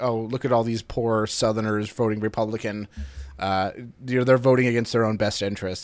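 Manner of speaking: normal talking voice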